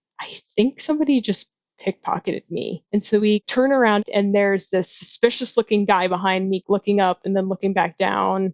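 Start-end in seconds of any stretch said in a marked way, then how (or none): 0.2-2.9 hushed whispered aside. Retelling telling a friend on a packed train: retelling a whisper. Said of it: "I whisper".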